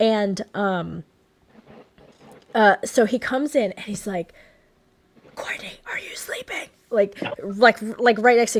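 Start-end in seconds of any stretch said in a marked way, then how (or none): 5.4-6.7 acted loud stage whisper. Retelling a late-night wake-up in a hotel room: imitating a loud whisper. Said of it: "he's whispering the whole time, very loud".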